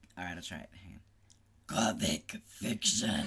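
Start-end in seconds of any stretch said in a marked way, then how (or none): 1.9-3.3 put-on demon voice, lower and louder. Asked to say the topic in that demon voice, the speaker tries it: demon voice. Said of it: "Can you do it in that demon voice?".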